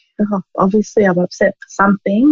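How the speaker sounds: plain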